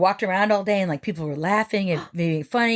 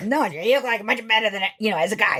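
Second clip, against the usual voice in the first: put-on rough, gruff voice. Retelling how an art teacher named DeCosmo talked: imitating teacher's rough voice. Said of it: "she talked like this".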